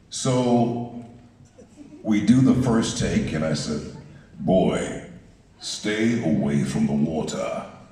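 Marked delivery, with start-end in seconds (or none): 4.4-7.6 put-on British accent, learned for acting. Retelling saying a line on the first take: put-on british accent. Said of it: "Was that a British accent?".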